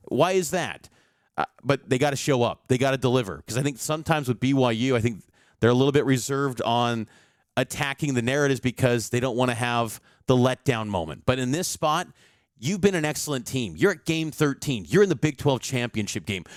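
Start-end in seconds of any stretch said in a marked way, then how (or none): 0.1-0.9 high, heavily exaggerated, mock sarcastic tone. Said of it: "kind of sarcastically going".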